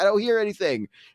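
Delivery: shrill petulant tantrum. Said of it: "throwing a hissy fit".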